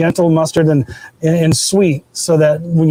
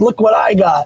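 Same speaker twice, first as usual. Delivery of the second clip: mock strutting, boastful, cocky, pitched-up voice; 5 semitones higher than usual. Retelling how a neighbor showed off his new smoker: imitating Chris's cocky brag. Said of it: "he's all strutting up".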